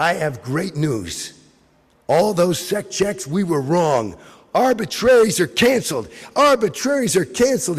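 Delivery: grand, proud, boastful declaiming tone. Retelling an announcement on stage, imitating a proud declaration. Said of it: "with a broad smile and a puffy chest".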